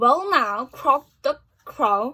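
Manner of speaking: ordinary delivery, nothing marked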